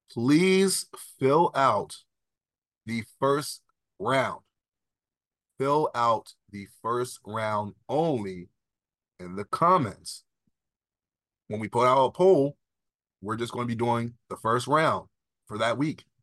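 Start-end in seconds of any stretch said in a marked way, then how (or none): 0.2-10.3 slightly slowed, careful, clear delivery. Speaker repeating an instruction to viewers to make sure it's clear, a little slower. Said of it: "I'm gonna say it a little bit slower".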